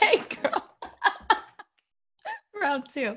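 very high, talking through giggles.

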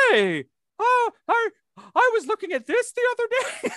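high-pitched, loud, puppety character voice. Doing an impression of Mitchell Alvis for the others: Muppet-like impression of Mitchell Alvis. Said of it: "my Muppet impression of, uh, Mitchell Alvis".

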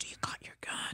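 barely audible, soft whisper. Retelling her husband asking her while a man ran around the house, whispered. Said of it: "he whispers".

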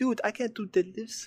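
put-on high-pitched South Indian accent. Retelling asking Eugene about deadlifts, answering in his stock put-on accent. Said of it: "That's my accent I do for everyone".

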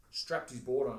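normal talking voice

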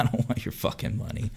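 playful, smiling delivery. Retelling what was said to her, smiling and joking. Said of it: "I said it in a smiling, I was smiling, and I said it jokingly".

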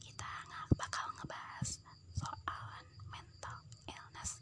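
soft, hushed, very quiet whispered voice. Speaker demonstrates what whispering sounds like; whisper. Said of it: "Kalau bisik-bisik tuh kayak gini".

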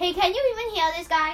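loud shout. Speaker calling out to the group, shouting. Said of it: "since you're shouting".

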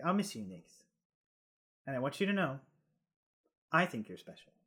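soft, gentle, close-up tone. Playing a character saying goodbye to Nyx in a hug, speaking softly. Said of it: "He says in the hug softly".

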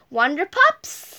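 plain reading voice

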